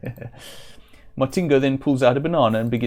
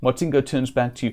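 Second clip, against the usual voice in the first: plain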